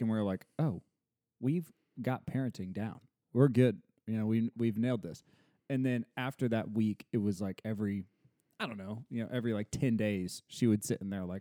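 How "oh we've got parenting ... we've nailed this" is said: plain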